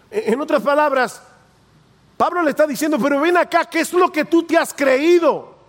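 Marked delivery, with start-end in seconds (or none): 3.0-5.4 put-on challenging, rebuking, confrontational tone. Paraphrasing Paul's question to a man: mock-confrontational rebuke. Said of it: "Y yo lo digo en ese tono".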